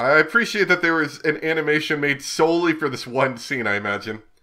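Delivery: plain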